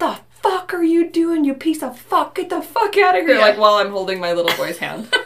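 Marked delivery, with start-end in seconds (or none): 0.0-3.4 play-acted, very high, enraged, furious scream. Retelling what she yelled in front of a ton of people, retelling a scream. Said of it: "I was literally screaming".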